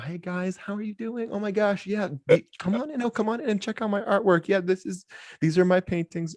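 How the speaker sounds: voice shot way up, very high-pitched. Retelling a man inviting people in to see his paintings, imitating his very high-pitched voice. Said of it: "it goes up four octaves".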